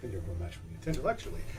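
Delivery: quiet muttering under the breath. Answering in character someone sharpening a harpoon: muttered under the breath. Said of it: "He just muttered that under his breath".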